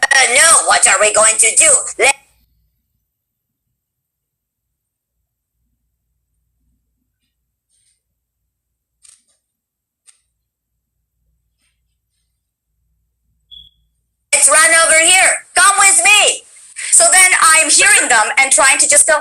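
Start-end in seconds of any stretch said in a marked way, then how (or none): 0.0-16.4 put-on high little girl voice, about twelve years old. Retelling the temp track for a cartoon character: twelve-year-old girl character voice. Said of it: "my little twelve-year-old girl's voice is like".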